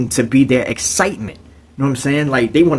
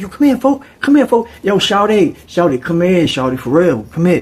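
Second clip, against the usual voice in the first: high-pitched, raised, carrying voice; 5 semitones higher than usual. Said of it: "he started calling some".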